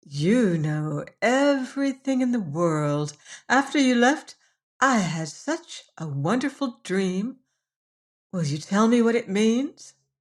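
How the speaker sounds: gentle, sweet, wheedling, coaxing voice. Narrator reads a girl stroking his head and asking about her dream, sweet coaxing voice. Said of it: "said in a sweet, coaxing voice".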